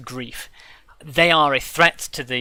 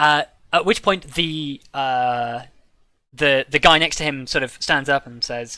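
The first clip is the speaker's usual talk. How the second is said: normal talking voice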